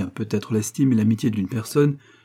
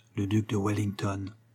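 very quiet and low, hushed; 8 dB quieter than usual. A major, holding a widow's hand, tells her a name, very quiet. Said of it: "lui dit bien bas".

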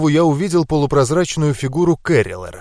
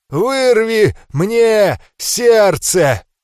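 croaked, hoarse, rasping dragon voice, pitched up; 6 semitones higher than usual. A dragon, cut open by the narrator, speaks to him in a hoarse rasp. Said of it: "прохрипел дракон".

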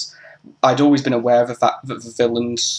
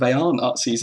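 usual speaking voice

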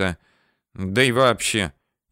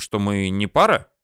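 ordinary delivery, nothing marked

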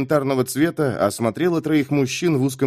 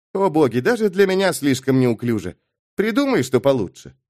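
ordinary delivery, nothing marked

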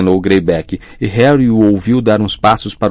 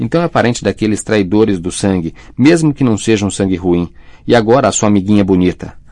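plain reading voice

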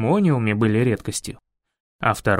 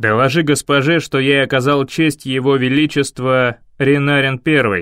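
barked, louder; 2 semitones lower, 5 dB louder than usual. A guard barks at the man who refused the travellers lodging. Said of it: "Гаркнул стражник".

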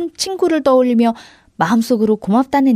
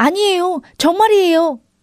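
confident, insistent shout; 7 semitones higher than usual. Insisting to a mocking monster that you really know the answer, shouting confidently. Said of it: "내가 자신 있게 소리치자".

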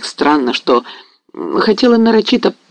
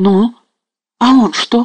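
high horrified outcry; 6 semitones higher than usual. Hearing a story about Mazepa, a listening woman cries out in horror. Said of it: "вскрикнула с ужасом".

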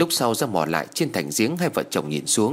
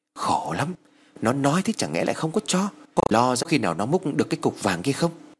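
plain reading voice

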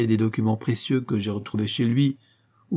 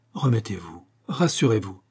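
speaking very softly and gently. The detective reassures a frightened lady, very softly. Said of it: "dit tout doucement le détective".

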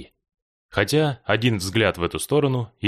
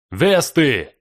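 loud, high, bellowed cry of alarm; 5 semitones higher, 5 dB louder than usual. A man fetching water turns, stares at the boat and yells loudly. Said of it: "громко заорал".

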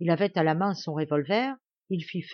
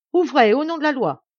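loud, pitched-up shout; 8 semitones higher, 8 dB louder than usual. Someone at the door calls out in the name of the law, shouting. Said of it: "on criait".

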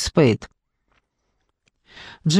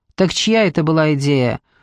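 ordinary delivery

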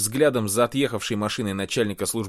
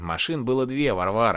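usual speaking voice

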